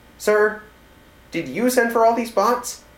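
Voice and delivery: puzzled, confused, very high-pitched and loud. Commander Burton speaks again to his superior, sounding confused. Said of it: "Burton's voice sounded confused this time".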